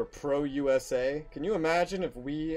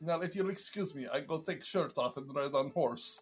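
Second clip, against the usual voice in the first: put-on Russian accent, spoken quieter; 5 dB quieter than usual. Explaining whom you were trying to be with your Russian accent, do a Putin impression. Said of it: "I was trying to be Putin".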